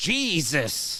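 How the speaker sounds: angry, high, exasperated outburst with overdone anger. Guessing the tone someone used, angry 'Jesus!' exclamation. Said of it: "Too angry on that Jesus".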